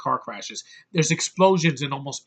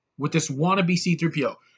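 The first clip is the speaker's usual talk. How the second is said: ordinary talk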